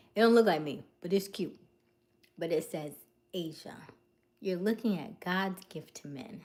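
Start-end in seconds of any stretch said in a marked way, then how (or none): none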